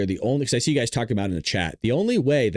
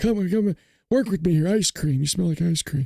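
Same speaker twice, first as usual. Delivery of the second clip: put-on elderly politician voice, pitched higher; 7 semitones higher than usual. Doing a mocking impression of Joe Biden for viewers: Joe Biden impression. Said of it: "my Biden impression".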